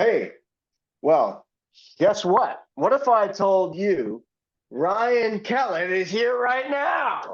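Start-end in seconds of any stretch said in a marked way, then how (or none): 2.0-7.3 high, slow, dramatic talk-show host voice.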